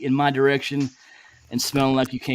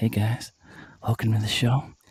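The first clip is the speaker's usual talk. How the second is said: put-on sexy, seductive voice; 3 semitones lower, 3 dB quieter than usual. Testing a new mic, joking: put-on sexy voice. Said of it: "I can talk all sexy like this".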